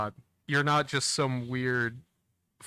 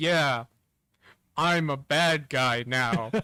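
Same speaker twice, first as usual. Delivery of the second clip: play-acted, unconvincing, transparently fake delivery; 2 semitones higher, 3 dB louder than usual. Retelling a story's betrayal scene, in Skier's unconvincing tone. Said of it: "In almost that exact tone of voice".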